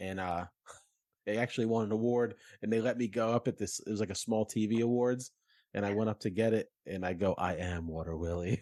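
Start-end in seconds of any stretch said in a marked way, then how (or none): 7.4-8.6 low, cartoony mascot character voice. Accepting a small TV award onstage in the Water Willie cartoon voice. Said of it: "I did a cartoon voice".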